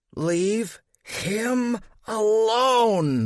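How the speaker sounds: growled through teeth. Narrator voicing the son cutting off his parents, growled through gritted teeth. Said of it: "growled through gritted teeth".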